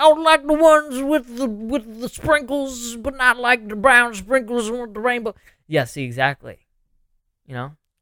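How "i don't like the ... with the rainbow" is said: voice pushed way up high. Imagining meeting him at a donut shop: Bill Cosby impression. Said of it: "you saw Bill Cosby".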